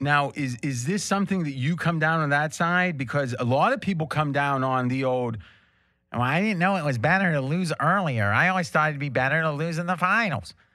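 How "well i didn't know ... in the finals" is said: put-on, mocking, dopey, dim-witted voice. Mimicking a common opinion, in a mocking dumb-person voice. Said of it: "That was my voice of the dumb people".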